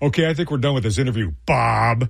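heavy sarcasm, totally fed-up and dismissive. Recounting an interviewee cutting the interview short, retelling a sarcastic brush-off. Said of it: "he was being very sarcastic and putting me off".

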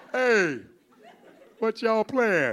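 put-on old-fashioned seventies-style voice. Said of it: "I have to use the 70s voice".

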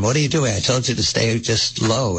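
normal talking voice

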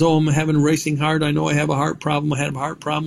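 fast, high-pitched, worried voice.

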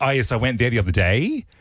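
rising question intonation at sentence ends. Mocking how people end their sentences, with rising question intonation. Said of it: "people end their sentences going like".

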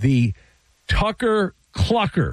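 very slow, each word stretched and drawn out. Host introducing Kyle Tucker's nickname to listeners, saying it very slowly. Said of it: "Say that very slowly".

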